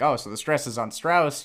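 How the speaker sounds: plain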